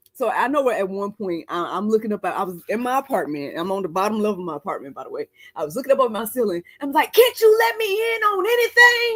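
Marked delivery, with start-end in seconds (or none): 7.1-9.1 very high, slow, exasperated frustrated yelling. Retelling looking up at the ceiling: imitating own past yelling at God. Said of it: "Just looking up and yelling at the Lord".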